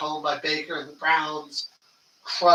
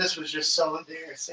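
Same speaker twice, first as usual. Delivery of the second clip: put-on disgusted voice; 5 dB quieter than usual. Retelling how a fan outed himself after a bad loss: imitating a disgusted fan. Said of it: "he was so disgusted".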